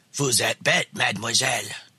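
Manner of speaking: put-on low, rough, gruff old man growl. Retelling what the old man at the head of the table said, rough, growly voice. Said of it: "She says it in a rough, growly voice and laughs".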